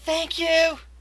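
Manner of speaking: high-pitched, called-out, carrying yell. Voicing a man on the ground calling out thanks: yelling thanks. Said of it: "the man on the ground over there just yell".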